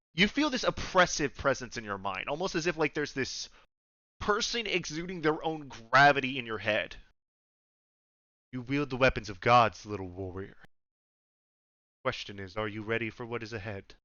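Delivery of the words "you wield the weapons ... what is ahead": much deeper, put-on dragon voice. A voice speaks inside the listener's head, in a deep dragon voice. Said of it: "the voice sounds a lot deeper".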